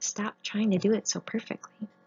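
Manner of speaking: sweet, soft, kind, tenderly spoken voice. Retelling God's second answer in prayer: imitating God's kind, sweet, gentle voice. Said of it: "kind, sweet, gentle voice".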